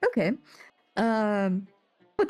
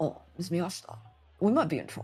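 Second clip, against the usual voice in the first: quiet, lowered speaking tone, dropped low; 3 semitones lower, 4 dB quieter than usual. A game master, voicing a character, turns to a player's character in a lowered voice. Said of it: "and he lowers his voice".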